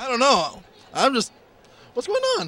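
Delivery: flustered, high, swooping, stumbling nervous stammer. Answering an interviewer's question about the babes at Comic-Con: stammering nervously. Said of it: "you start stammering like a little wimp".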